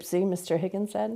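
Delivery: ordinary delivery, nothing marked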